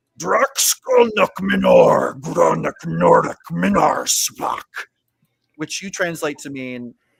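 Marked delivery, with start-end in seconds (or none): 0.2-4.7 huge, rough, drawn-out bellow with wildly swooping pitch. Game narrator voices an unseen figure shouting from behind a character, booming, massive shouting voice. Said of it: "a massive voice that kind of shouts".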